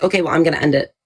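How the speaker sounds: put-on dismissive attitude. Retelling how someone ended a live stream: imitating Crow with an attitude. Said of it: "he caught an attitude".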